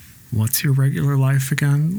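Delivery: ordinary delivery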